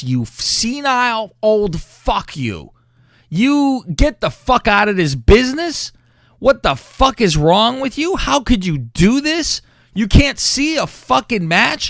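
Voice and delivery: put-on furious screaming. Recounting ranting at someone over a wrestling match, retelling a scream. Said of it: "I start screaming at Vince".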